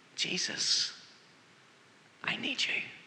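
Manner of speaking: slow, hushed, barely audible whisper. Retelling a prayer in a crowd, first words: retelling a whisper. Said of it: "I could hear myself whisper".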